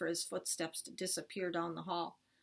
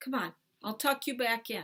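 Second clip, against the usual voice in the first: ordinary delivery, nothing marked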